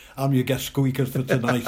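ordinary talk, nothing marked

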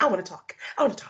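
acted-out, keen, eager, can't-wait outburst. Retelling how Johnny jumped in to speak: imitating eager speech. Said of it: "He's eager".

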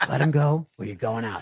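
put-on whisper. Retelling what a fighter said during a chokehold: imitating a whisper. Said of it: "and whispers into my ear".

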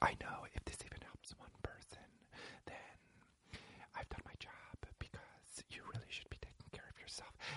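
very quiet, fast, rushed, breathy whisper. Mocking a woman who whispers the whole time, imitating someone whispering. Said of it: "she's doing the whisper thing the whole time".

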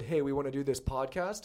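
ordinary talk, nothing marked

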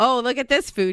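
usual speaking voice

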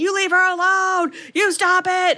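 high-pitched scream. Retelling a chaotic story about Melanie, imitating Alan screaming. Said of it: "Alan's screaming like".

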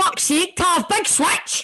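mock high-pitched screaming screech. Mimicking a guy screaming for the ball: imitating someone screaming. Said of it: "He's screaming".

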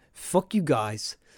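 put-on British accent. Voicing the show's uk listeners, a host says it in a british accent. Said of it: "You even did a great accent just then".

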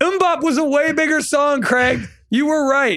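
high, yelled-out call. Retelling what a guy who recognized him yelled to him, retelling a yell. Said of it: "and he's yelling to me".

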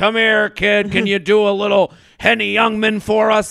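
put-on voice of an elderly man. Retelling a request from an eighty-year-old guy at a gig: imitating an eighty-year-old guy. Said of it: "an eighty-year-old guy who's like".

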